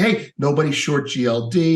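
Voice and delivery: ordinary talk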